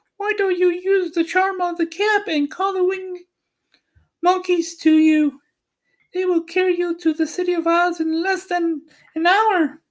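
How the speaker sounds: squeaky, small, very high little voice. Reading a story aloud, the Queen of the Field Mice answers Dorothy, squeaky little voice. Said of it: "Among them was the Queen herself, who asked in her squeaky little voice, / Among them was the Queen herself, / who asked in her squeaky little voice".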